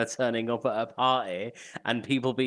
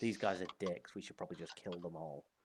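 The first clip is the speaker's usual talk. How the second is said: whispering, lower and quieter; 5 semitones lower, 15 dB quieter than usual. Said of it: "I wanna whisper that specifically to Hecknom".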